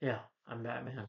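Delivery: soft, low, lifeless, phoned-in throwaway delivery. Mocking an actor who is phoning it in: Michael Keaton with no energy. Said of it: "but in here it's just".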